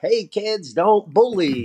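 put-on very high, friendly, kids' show dinosaur voice. Speaker shows how they talk to elementary school kids, in a Barney voice. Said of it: "I got to put on my Barney voice".

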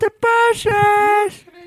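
mock teasing voice, very high, loud, slow, squeaky.

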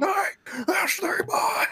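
mock shrill, very high-pitched hollering yell. Retelling what a fan in the crowd yelled: imitating a fan yelling. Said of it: "stands up out of his seat and yells".

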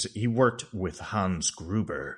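slow, dark, foreboding, ominous delivery. Quoting the dean introducing Herbert West to another student: ominous Dean Halsey line. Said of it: "if it's not ominous enough".

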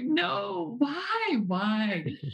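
high, overly dramatic wail with laughter. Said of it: "I'm sure it was not that dramatic".

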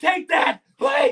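very high, loud, pleading yell.

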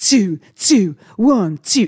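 retro 1980s radio DJ voice. Doing his sound check while another speaker complains about it, in a 1980s DJ voice. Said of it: "He sounds like a 1980s DJ".

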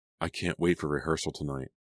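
ordinary delivery

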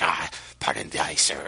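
very deep, gravelly voice, dropped low, slow drawl. Retelling a movie scene, imitating Michael Keaton's graggly groundskeeper. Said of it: "he, like, talks like this".

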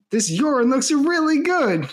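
high, thrilled, excited gushing voice. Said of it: "so excitedly just, like, says".

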